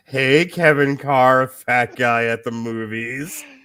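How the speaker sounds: eerie, creepy, teasing call-out. Calling out to Kevin Carr, creepy calling out. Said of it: "Why do you have to make this creepy?".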